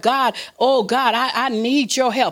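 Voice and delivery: ordinary talk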